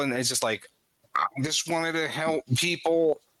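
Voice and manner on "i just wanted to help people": terrible, pitched-up synthesized robot voice. Describing a game character's line from a voice module, in a terrible synthesized voice. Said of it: "in this synthesized voice module that is really terrible".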